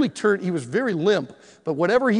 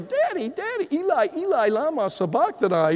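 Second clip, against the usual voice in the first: put-on high, bawling wail like a sobbing child; 8 semitones higher than usual. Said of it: "he's just bawling".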